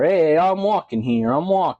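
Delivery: imitated New York accent. Speaker trying out accents, now showing a New Yorker accent. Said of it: "I can do New Yorker".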